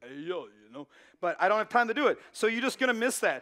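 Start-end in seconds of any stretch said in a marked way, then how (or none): 0.0-0.9 put-on Philly boxer accent. Out of time, the speaker teases a story he won't get to tell, in Rocky Balboa accent. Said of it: "use my Rocky Balboa accent".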